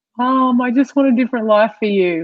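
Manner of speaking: weepy, crying, tearful pleading through tears. Retelling calling her mom, imitating own crying plea. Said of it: "I called her crying".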